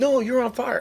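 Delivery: insistent tone, high pitch, loud.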